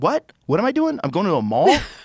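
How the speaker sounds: bewildered, baffled outburst, high and swooping pitch. Acting out a fifty-five-year-old guy asked to wear a suicide vest: imitating a baffled fifty-five-year-old guy. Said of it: "he's like".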